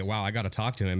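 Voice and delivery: normal talking voice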